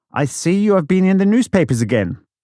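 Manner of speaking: very loud, high, carrying call-out voice. Retelling how a liaison officer addressed the top table at dinner, very loud voice. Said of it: "in a very loud voice said".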